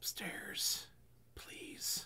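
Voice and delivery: soft, hushed, sneaky whisper. In a tabletop game, sneaking up to him while obfuscated, whispering. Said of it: "I'm gonna whisper".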